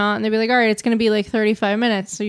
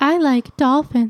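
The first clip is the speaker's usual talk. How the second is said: flirtatious put-on voice, higher pitch; 4 semitones higher than usual. Voicing a marine biologist from Arizona: flirty put-on voice. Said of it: "Why do you always make it like a, you're, like, flirting?".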